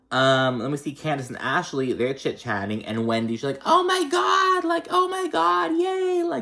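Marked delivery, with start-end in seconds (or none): 3.6-6.2 put-on dramatic voice, much higher, slower. Recapping a show episode, doing a mock-dramatic Wendy impression. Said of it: "just being all dramatic and shit".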